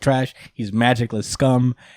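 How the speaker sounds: ordinary delivery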